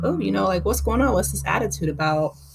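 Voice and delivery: ordinary talk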